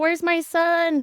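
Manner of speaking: acted, high-pitched scream. Retelling running onto the scene looking for her son: retelling own screaming.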